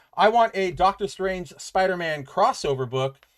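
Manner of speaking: normal talking voice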